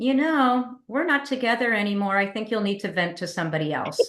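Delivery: plain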